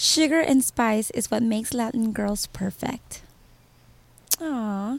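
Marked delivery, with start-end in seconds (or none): 0.0-3.2 seductive, sultry, sexy voice. Asked to read the back of a DVD, in a sexy voice. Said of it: "Read the back in a sexy voice".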